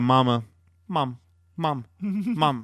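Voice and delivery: very slow, drawn-out fake sobbing. Mocking an injured player for crying out for his mom: mocking someone crying for mom. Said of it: "It's nice of you to cry".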